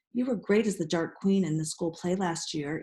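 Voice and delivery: ordinary talk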